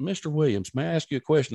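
ordinary talk, nothing marked

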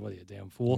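mock muttering under breath. Talking about people unsure they need a financial guy, acting out a mutter under breath. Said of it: "under my breath".

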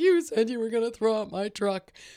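put-on crying child voice. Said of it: "the child is still crying and being like".

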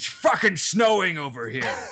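put-on cranky, angry old man griping voice. Retelling what an old man said, imitating an angry old man. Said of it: "Was he that angry about it?".

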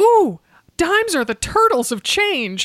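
put-on yell, loud and very high. Retelling what a friend yelled on finding a dime: imitating a friend yelling. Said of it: "she yells out".

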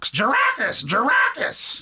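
very high, shrill, swooping bird shriek. Describing a giant pet bird, imitating a screaming-midwife bird call. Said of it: "It sounds like screaming midwife when it talks".

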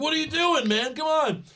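high, loud, frustrated wrestler voice. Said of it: "which frustrates Owens".

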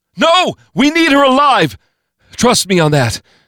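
shrill, very high, loud screaming cry. A man shouts down from half a flight up as a rifle is aimed at a woman, screaming. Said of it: "Tim Feely screamed down from a half flight up".

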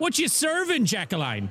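put-on Irish accent with a lilt. Asking Jacqueline what she is serving, in character: Irish accent. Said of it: "Why'd you turn Irish there?".

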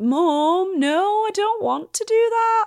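put-on high, loud Northern accent, stretched vowels. Imitating Leeds cousins talking back to their mom, drawn-out Northern accent. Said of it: "They'd be all, like, long, long words".

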